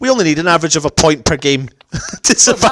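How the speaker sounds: tongue-in-cheek, sarcastic delivery. Imagining what Moyes said after doing sums on the remaining games: sarcastically imitating Moyes. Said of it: "I'm being sarcastic".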